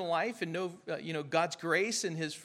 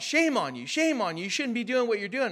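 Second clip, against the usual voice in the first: mock scolding yell, loud and high, sounding far off; 5 semitones higher, 5 dB louder than usual. Retelling what a man yelled across a parking lot: imitating a man yelling. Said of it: "he was yelling at me from across the parking lot".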